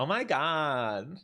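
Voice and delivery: high, put-on valley girl voice, "God" drawn out. Joking about local speech: valley girl voice. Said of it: "it's like a valley girl".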